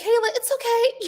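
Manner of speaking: very high-pitched, nervous, self-calming, soothing voice. Retelling how they talked to a woman on TV: retelling own nervous calming words. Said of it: "I was just very nervous".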